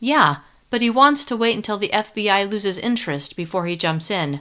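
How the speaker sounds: usual speaking voice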